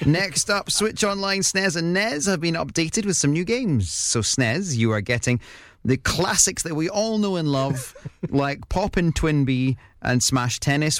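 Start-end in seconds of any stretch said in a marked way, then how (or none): 3.9-11.0 ironic, sarcastic tone. Reading out a list of games to the other speaker, sounding sarcastic. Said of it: "you're saying those like you're being sarcastic".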